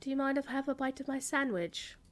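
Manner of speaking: put-on nice, courteous British accent. Retelling a polite question asked at an autograph table: David Warner British accent. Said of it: "in his usual nice British accent".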